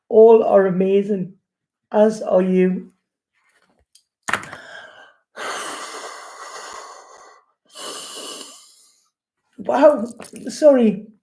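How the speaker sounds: tearful voice. A speaker sending love and blessings to the world, crying. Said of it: "It's one of them love cries again".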